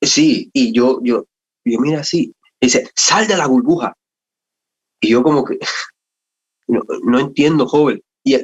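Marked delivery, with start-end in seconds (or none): 3.0-3.9 forceful, agitated, authoritative voice, pitched up. Quoting a young man repeating an order to them, retelling a forceful, agitated tone. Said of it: "con un tono de voz más fuerte y, y, y como que agitado".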